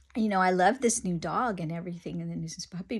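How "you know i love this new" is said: usual speaking voice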